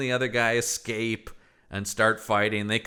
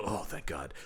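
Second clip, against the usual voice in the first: character voice with heavy, audible relief; 5 semitones lower, 12 dB quieter than usual. Retelling a movie death scene, imitating Michael Madsen. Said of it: "I actually heard him go".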